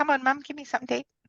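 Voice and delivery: high, pleading, begging puppy voice. Owner voicing her dog at her feet in the kitchen, voicing the dog begging. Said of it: "always at mum's feet in the kitchen".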